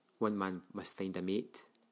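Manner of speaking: ordinary delivery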